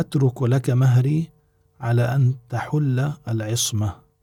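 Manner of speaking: ordinary talk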